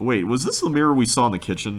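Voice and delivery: normal talking voice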